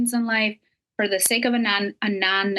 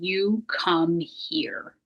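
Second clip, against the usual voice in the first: stern, firm, no-nonsense delivery; 3 semitones lower, 4 dB quieter than usual. Retelling what he said grabbing a man by the shirt: retelling a stern command. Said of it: "with a real stern voice".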